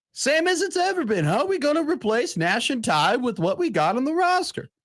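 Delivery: dopey dumb guy voice. Playing a recorded bit answering a sports question: stupid person voice. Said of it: "that's my stupid person voice".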